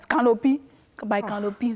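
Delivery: put-on English spoken with a Yoruba accent. Describing how seating is announced at a burial: Yoruba accent. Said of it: "I'm using the Yoruba accent".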